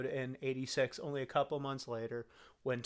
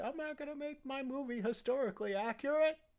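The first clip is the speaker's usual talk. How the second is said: put-on, very high, shrill yelling; 13 semitones higher than usual. Retelling how Ridley Scott yelled at people: imitating Ridley Scott yelling. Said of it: "yelling at people because he was like".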